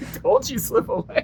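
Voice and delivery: high, laughing, whispered mock stern tone.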